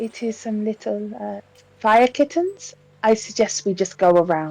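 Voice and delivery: very soft, very hushed voice. A tabletop player speaks in character to the group, very, very quietly. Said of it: "says very, very quietly".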